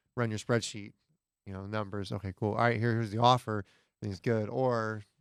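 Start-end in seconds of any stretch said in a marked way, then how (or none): none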